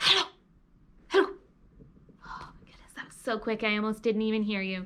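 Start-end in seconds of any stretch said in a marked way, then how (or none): 0.0-1.3 rattled off as fast as possible, high. Leading listeners in a warm-up, saying hello together, really fast. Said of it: "Let's say hello as fast as we can".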